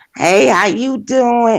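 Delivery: put-on elderly woman's voice. Speaker imitates a woman she's describing, in an old lady voice. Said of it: "Like an old ass lady".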